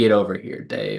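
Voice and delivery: put-on mean tone. Act out how a man might say it to dave in a mean way, mock-mean. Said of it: "he said it in a mean way".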